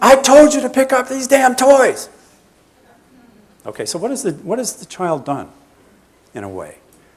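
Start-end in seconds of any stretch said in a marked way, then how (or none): 0.0-2.1 shrill, furious, very high, loud angry yell. Acting out the parent storming in: imitating a parent yelling louder. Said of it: "Parent then picks up the volume".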